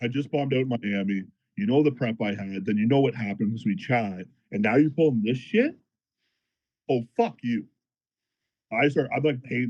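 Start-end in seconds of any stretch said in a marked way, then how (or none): none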